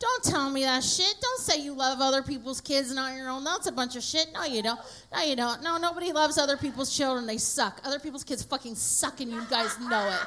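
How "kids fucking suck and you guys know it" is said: ordinary talk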